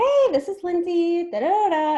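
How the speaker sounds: very slow, drawn-out, loud, high squeaky cartoon voice. Showing how she answers the phone, in her Minnie Mouse voice. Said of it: "my friends call it my Minnie Mouse voice".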